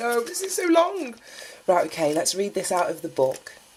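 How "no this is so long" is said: much higher-pitched, squealed mock dismay. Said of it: "I'm like".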